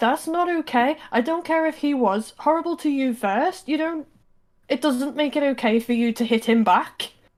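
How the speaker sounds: angry, high-pitched, indignant rant.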